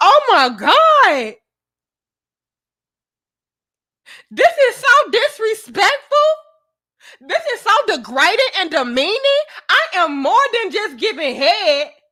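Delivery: high, swooping, up-in-arms outrage, "God" stretched out. Mocking how women would react, up in arms: imitating outraged women. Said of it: "y'all would be up in arms".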